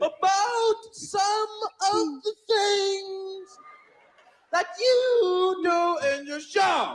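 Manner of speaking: loud, very slow, drawn-out, leaning drawl. Retelling a phone call, doing a Bill Cosby impression. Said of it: "Does he actually talk like that?".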